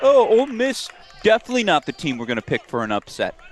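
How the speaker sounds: very high, sing-song, swooping, taunting mocking voice. Host teasing another host's take, using a mocking voice. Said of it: "I'm going to use my mocking voice".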